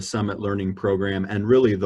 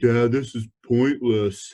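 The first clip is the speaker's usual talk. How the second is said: put-on voice of a sixteen-year-old teenage boy; 3 semitones higher than usual. Parent recalling his son's view of goal setting: imitating his sixteen-year-old son. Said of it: "That's my best impression of my sixteen-year-old".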